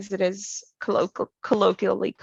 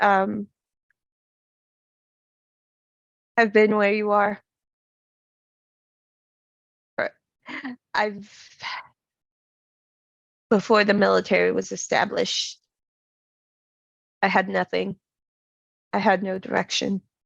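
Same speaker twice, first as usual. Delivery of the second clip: confiding, discreet, just-between-us tone. A narrator voicing a character speaks to another character in a lowered voice. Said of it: "He does lower his voice and he says".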